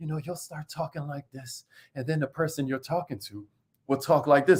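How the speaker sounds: dejected, deflated, low half-whisper. Explaining how a bad mood spreads in conversation, demonstrating a down half-whisper. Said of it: "why am I whispering?".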